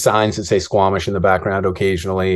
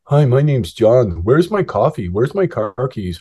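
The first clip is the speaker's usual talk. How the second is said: mocking, snarky, sarcastic sing-song teasing tone; 4 semitones higher than usual. Acting out how she imitates him, in a mock-sarcastic tone. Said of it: "she'll often imitate me in a sarcastic tone".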